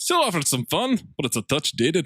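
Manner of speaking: put-on Irish accent. Reading a critic's movie review quote aloud in an Irish-sounding accent. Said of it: "Sounds like your Irish accent".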